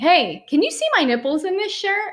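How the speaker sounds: acted out, loud, high-pitched blurting at full voice. Retelling barging into a sixteen-year-old's room about a shirt: imitating own loud question. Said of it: "really loudly say".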